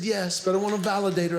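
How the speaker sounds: ordinary delivery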